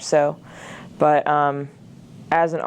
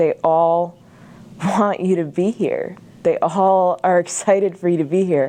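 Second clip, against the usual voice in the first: choked-up voice, catching and breaking; 2 semitones higher than usual. Speaking about their last year at this school, choking up. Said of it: "I'm choking up a little bit".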